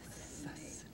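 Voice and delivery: soft whisper of one word, relishing each sound. Showing the class how to whisper the word assassinate: whispering. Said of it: "I'd like you to whisper the word assassinate".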